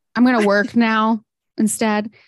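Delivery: ordinary delivery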